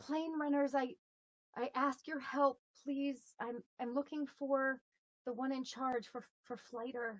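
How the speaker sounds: loud calling voice. In a role-play, calling out to the plane runners for help, loud calling voice. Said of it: "I'll try and use a loud voice and say".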